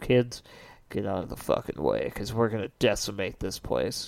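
low, soft, threatening growl. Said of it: "looked right at that boat and said".

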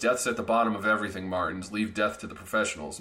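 ordinary delivery

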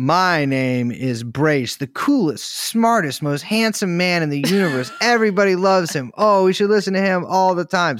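high hollering from far off. Pretending a stranger yells through a window, bragging: pretend stranger yelling outside. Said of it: "someone on the street yelling out through my window".

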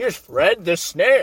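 small cartoon villain voice. Explaining why Gary's gone, the speaker quotes Plankton: Plankton impression. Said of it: "There's my Plankton impression".

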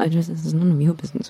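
muttered, mumbled under the breath. After being told to leave her alone, she answers under her breath. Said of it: "just under her breath goes like".

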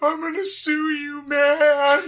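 put-on very high, slow, drawn-out crybaby whine. Retelling what a slapped boy said from the floor: imitating someone crying. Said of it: "on the floor crying and going".

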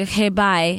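ordinary delivery

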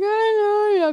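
put-on sobbing with voice pitched very high. Retelling being comforted in a diner bathroom, imitating past self crying. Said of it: "crying, crying".

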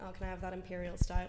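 ordinary talk, nothing marked

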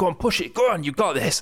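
encouraging, high-pitched yell. Recalling shouting encouragement as a motivational speaker: imitating a gym shout. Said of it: "I did shout, as you would shout to one of your mates in the gym".

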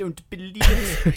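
very loud, very slow, high, dragged-out bellowing cry. Showing how an actor sounds in a role: Victor Meldrew voice. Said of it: "sort of Victor Meldrew".

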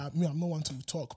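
ordinary talk, nothing marked

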